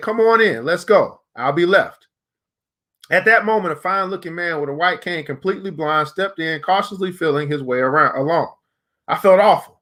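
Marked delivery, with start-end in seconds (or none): 0.0-1.2 slow, deliberate, drawn-out calling voice. Speaker retelling calling someone in a third time, retelling a loud call. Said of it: "in a loud voice".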